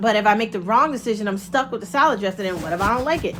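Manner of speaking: normal talking voice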